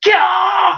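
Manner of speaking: sudden, very high-pitched scream out of nowhere. Voicing a character who slams his palm onto a blade: screaming out. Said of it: "he just screams out".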